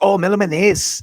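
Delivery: put-on Salvadoran accent, "man ace" run together. Retelling how a neighbor from El Salvador said a name: imitating a Salvadoran neighbor's pronunciation. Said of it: "the way that he said his name".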